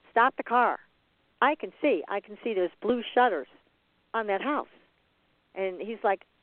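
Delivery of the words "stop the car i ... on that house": mock hurried, insistent, urgent screaming outcry. Retelling a woman screaming at her friend in a car: imitating someone screaming. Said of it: "she's screaming at her friend".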